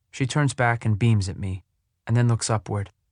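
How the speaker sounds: ordinary delivery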